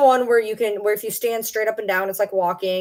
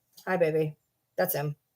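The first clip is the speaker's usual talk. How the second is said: normal talking voice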